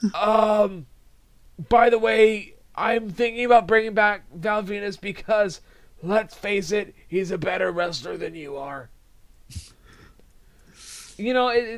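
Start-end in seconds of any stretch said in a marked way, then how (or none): 0.1-8.9 mocking put-on heavy chain-smoker voice. Mocking a wrestling executive who sounds like a heavy smoker: John Laurinaitis impression. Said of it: "He sounds like he went through about three packs before the show".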